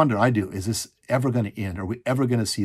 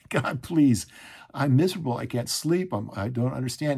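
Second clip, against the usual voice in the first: acted tearful crying, much higher; 3 semitones higher than usual. Recalling sleepless nights when medication failed, retelling crying out to God. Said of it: "I'm literally crying".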